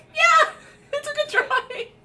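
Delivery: giggly, laughing speech, very loud and very high. Retelling a reply to a girl in a haunted house, laughing while talking. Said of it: "I just started laughing".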